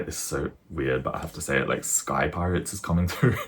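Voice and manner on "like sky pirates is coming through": laughing and giggling through the words. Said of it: "I don't know why I'm laughing".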